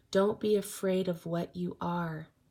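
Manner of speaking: usual speaking voice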